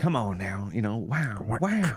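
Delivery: rough put-on celebrity actor voice. Retelling a scene with Mobius, doing an Owen Wilson impression. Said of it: "that's the best I can do to Owen Wilson".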